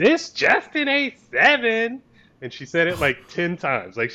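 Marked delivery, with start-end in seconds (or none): 0.0-2.0 angry scream, loud, pitched very high. Speaker retells a woman screaming at them as they try to pull out: retelling a scream. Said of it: "some chick just screams".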